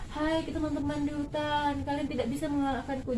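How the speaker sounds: limp, flat, listless low-energy delivery. Showing how not to voice a boastful rabbit's line: flat, weak, low-energy delivery. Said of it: "jangan kayak gitu, kayak orang nggak sarapan".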